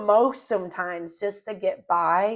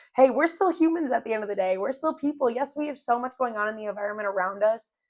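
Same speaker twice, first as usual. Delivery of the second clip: fast, eager, excited rush of words; 2 semitones higher than usual. The speaker catching themselves getting excited, talking fast. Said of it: "Wow, I'm talking fast".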